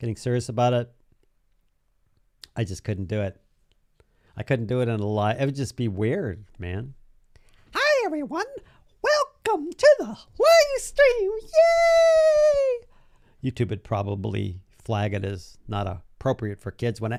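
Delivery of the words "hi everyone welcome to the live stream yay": tiny put-on voice, very high and loud. Showing how a live stream would sound: tiny voice. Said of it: "talk in that tiny voice".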